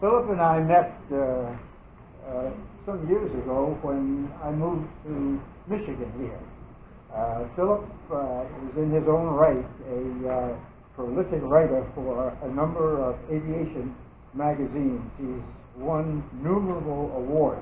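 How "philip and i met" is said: louder, projected voice. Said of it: "Can you speak a little louder?".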